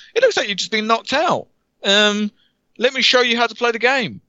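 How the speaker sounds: very high-pitched cartoon voice. Describing a game's opening scene, voicing Pedro the floating banana. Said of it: "this weird floating banana named Pedro comes out and just goes".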